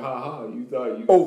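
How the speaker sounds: laughing, teasing jeer. Picturing a rival team laughing at fans: imitating the Cavaliers laughing. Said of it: "sitting over there laughing".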